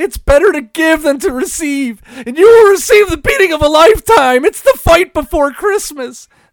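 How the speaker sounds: very loud, very high, full-volume ranting promo style. Doing a Mankind impersonation to open the show. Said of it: "I had to try to do the Mankind impersonation".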